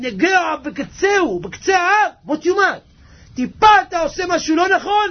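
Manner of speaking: fiery, high, loud preaching shout.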